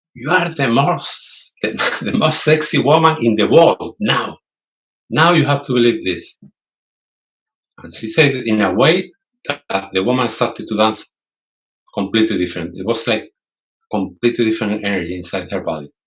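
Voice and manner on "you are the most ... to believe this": imitated very loud voice, raised pitch, insisting hard. Retelling what a flamenco teacher told a shy student: imitating a very loud voice. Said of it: "teacher said to her in a very loud voice".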